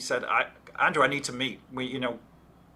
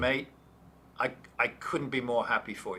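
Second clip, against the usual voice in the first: put-on voice breaking with emotion, quieter; 4 dB quieter than usual. Retelling a boss's reply to news of leaving: imitating Andrew's voice breaking. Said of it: "his voice starts breaking".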